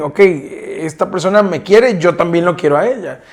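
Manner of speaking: plain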